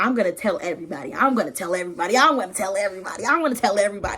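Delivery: mock woman's voice, bright, joyful, gushing with delight. Retelling a Bible scene, a woman running off: imitating a smiling woman. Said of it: "She's smiling".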